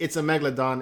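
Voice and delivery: normal talking voice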